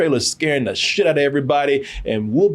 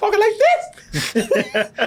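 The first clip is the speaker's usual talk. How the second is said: very high, swooping, squeaky put-on voice. Describing a film role, imitating its voice: squeaky Nicolas Cage voice. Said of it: "Nicolas Cage with a squeaky voice?".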